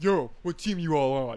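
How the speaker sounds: loud, swaggering gym bro voice.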